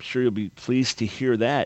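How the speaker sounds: usual speaking voice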